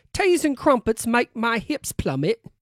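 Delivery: put-on British accent. Trying once more to show off a British accent, speaker does a British accent. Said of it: "I thought that was a pretty good British accent... Let me let me try again".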